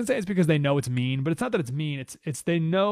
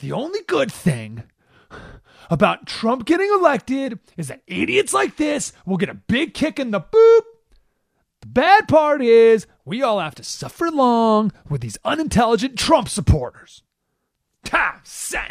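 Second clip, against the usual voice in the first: mock super angry, loud, pitched-up voice; 8 semitones higher, 8 dB louder than usual. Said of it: "Super angry".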